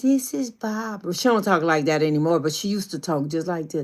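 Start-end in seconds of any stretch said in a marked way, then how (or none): 0.0-1.1 put-on soft, baby-like little voice. Describing how a woman used to answer the phone, imitating Barbara's soft baby voice. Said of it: "She had this real soft baby like voice".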